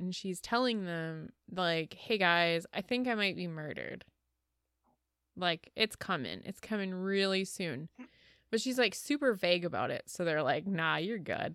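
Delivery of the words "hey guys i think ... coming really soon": plain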